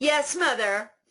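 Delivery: mock resentful, sarcastic, high, sassy tone. Recalling how they answered their mother, mock-sassy and angry. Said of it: "I'm sassing you".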